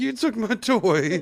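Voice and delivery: mournful, high, sad put-on little puppy voice. Retelling how the pet looks after its toy is taken: imitating a sad pet. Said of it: "She's looking at me, like, so sad".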